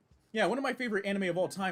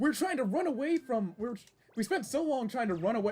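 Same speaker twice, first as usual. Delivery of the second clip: straining voice, cracking and pitched up; 5 semitones higher than usual. Complaining about streaming services after getting passionate: voice cracking. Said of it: "my voice is cracking".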